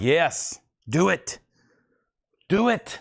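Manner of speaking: very slow delivery, each word drawn out. Imitating viewers urging a vinyl order: Emperor Palpatine voice. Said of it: "Like Emperor Palpatine".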